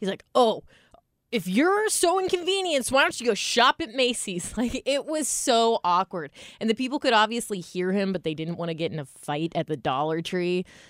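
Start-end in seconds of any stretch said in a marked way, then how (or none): 0.3-4.5 passive-aggressive complaining, pitched high. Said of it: "complaining about them so passive-aggressively and loudly".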